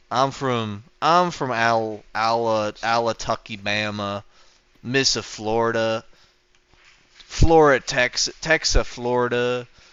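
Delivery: slow, put-on Southern US drawl. Showing off a put-on accent: Southern drawl. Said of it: "let me do my ... my Southern accent, like like my southern my southern drawl".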